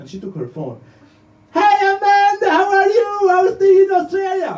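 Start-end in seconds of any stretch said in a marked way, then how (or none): 1.5-3.3 loud, slow, high-pitched shout as if across distance. Acting out mom calling an aunt in Australia on the phone, shouting. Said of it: "Mom, why are you shouting?".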